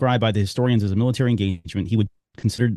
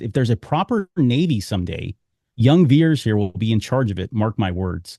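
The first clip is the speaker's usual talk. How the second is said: ordinary talk, nothing marked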